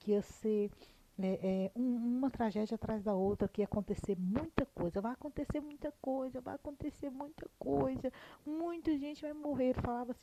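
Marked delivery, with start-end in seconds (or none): 5.0-9.7 put-on high, childlike little voice like a small kid. Retelling what someone kept saying would happen, imitating a child's voice. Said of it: "com um jeitinho de criança falando".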